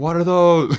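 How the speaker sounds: acted freaked-out outburst. Retelling a dancer spotting goat hooves on her partner, imitating someone freaking out. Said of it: "starts freaking out".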